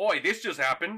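put-on loud Australian accent. Describing a scene, the speaker imitates Hugh Jackman breaking into his actual accent: stereotypical Australian accent as Hugh Jackman. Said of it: "very, very stereotypical Australian voice".

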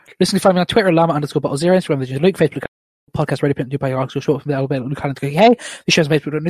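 as fast as possible, rattled off at top speed. Asked how to read his plug, the speaker first reads it as fast as possible. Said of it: "I'll do it as fast as I can first".

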